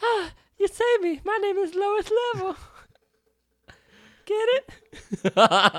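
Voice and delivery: squeaky silly high pitch. Playing the ship Mother just after being saved, in Lois Level funny voice. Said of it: "doing a funny voice".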